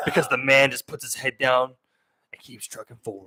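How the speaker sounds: deep, macho, manly ad narrator voice. Describing a favorite video of a car at sunset, the speaker quotes its narrator in a deep manly narrator voice. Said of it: "It's like a deep manly voice".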